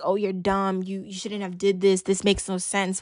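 plain

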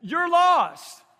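put-on shouting. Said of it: "he just shouts out the window at me".

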